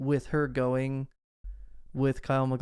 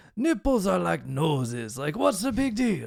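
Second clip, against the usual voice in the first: slow, bad put-on Austrian accent drifting toward Italian. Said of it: "I can't do accents".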